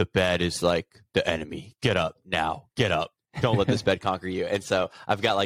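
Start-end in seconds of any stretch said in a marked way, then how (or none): 0.0-4.5 deep, low-pitched voice. Imitating a motivational voice telling him to get out of bed: Jocko deep voice. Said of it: "in his deep voice".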